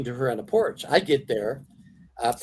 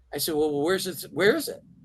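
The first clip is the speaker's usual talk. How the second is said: ordinary talk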